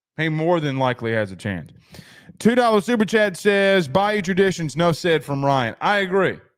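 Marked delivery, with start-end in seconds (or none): none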